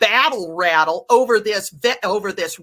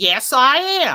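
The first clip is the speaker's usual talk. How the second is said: mock confident, self-assured, assured tone; 3 semitones higher than usual. Retelling a man's answer to a nurse's question; retelling a confident reply. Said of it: "And he says confidently".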